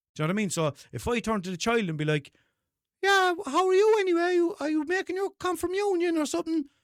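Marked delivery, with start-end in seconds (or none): 3.0-6.6 very high, off-target kids' cartoon voice. Speaker turning to a four-year-old child, doing a bad Peppa Pig voice. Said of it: "my Peppa Pig voice does not sound like Peppa Pig".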